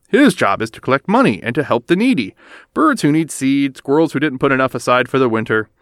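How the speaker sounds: plain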